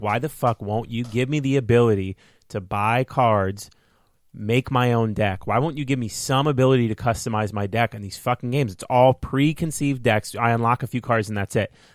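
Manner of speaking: ordinary talk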